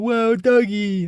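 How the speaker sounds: put-on, very high, excited kid voice full of wonder. Speaker watching a dog, mimicking a kid who sees one, imitating an excited kid. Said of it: "I sound like a kid just seeing a dog and going".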